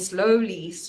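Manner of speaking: heavy stress placed on the word 'slowly'. Explaining a policy decision, stress on 'slowly'. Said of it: "emphasis on the word slowly".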